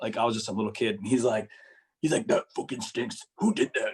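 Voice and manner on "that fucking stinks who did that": deep, low put-on big guy voice. Retelling a story from when they were a kid, quoting the big guy, imitating a deep voice. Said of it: "he had this deep voice".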